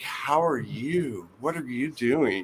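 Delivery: play-acted, suddenly keen, curious, interested tone. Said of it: "she was just as interested in me".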